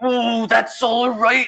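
very high, very slow wrestler drawl, every word drawn out. Imagining ordering food at McDonald's: Macho Man voice. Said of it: "The Macho Man's like".

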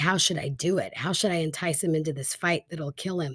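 ordinary talk

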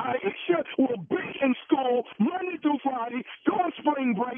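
hard, insistent, forceful, every word pushed hard. A mother argues with her daughter's school, yelling. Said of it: "Who are you yelling at like that?".

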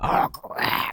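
character voice in a whisper. Redoing the other speaker's answer as suggested: Roy voice.

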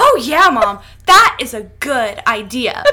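loud, mock peppy, perky kid's voice. A mother retells her child's reply, imitating a peppy reply. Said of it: "she was very peppy in her response".

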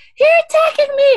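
shrieking, very high, loud hollering scream. Act out a woman who was pulled over and refused her ticket, imitating someone hollering and screaming. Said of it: "hollering and screaming".

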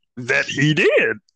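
put-on sage-like master voice with inverted word order. Answering a question about another player: Yoda voice. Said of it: "Why are you trying to sound like Yoda?".

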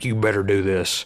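put-on deep, commanding voice. Speaker imitates one particular guy with 2,500 followers, in a deep commanding voice. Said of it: "he's got a deep voice and he's like very commanding".

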